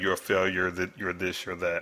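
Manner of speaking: usual speaking voice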